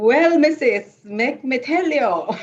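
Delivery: speech in a Caribbean accent. Asked for it, starting their story in their caribbean accent: caribbean accent. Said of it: "want it in my Caribbean accent?".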